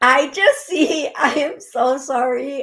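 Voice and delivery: laughing while speaking. Apologizing while describing what is seen: giggling while talking. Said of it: "I'm giggling at this".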